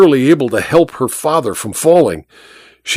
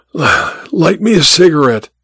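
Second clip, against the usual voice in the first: wheezing, higher pitch; 2 semitones higher than usual. A stranger lying in a roadside ditch speaks to the woman cradling him, wheezing. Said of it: "he wheezed".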